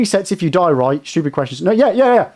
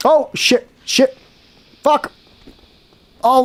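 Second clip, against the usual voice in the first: high, drawn-out, panicked delivery; 7 semitones higher than usual. Reacting mid-attempt on day two, attempt five: panicking. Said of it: "I'm panicking".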